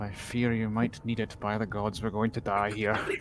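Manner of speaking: low, muttered half-whisper under the breath. Game master voicing a character's aside: half-whispering under his breath. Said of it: "he whispers under his breath".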